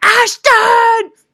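piercing, very high, very loud scream. Fan recounting yelling a name from the crowd at a sound check, retelling a scream. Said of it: "I screamed".

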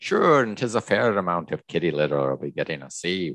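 put-on Irish accent. Describing a character's shifting accents, the speaker quotes him: Senor Leon's Irish accent. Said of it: "there's like an Irish balloon".

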